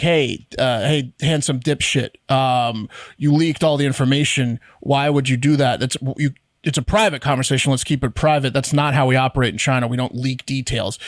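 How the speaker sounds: ordinary talk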